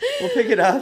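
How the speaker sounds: reassuring, with laughter.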